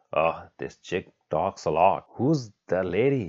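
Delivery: plain reading voice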